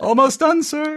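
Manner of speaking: very high, squeaky, sheepish and meek.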